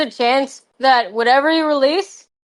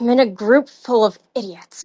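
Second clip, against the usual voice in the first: annoyed muttering under breath. Player voicing her character stepping away from the group, annoyed mutter under breath. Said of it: "mutter under her breath with her arms crossed".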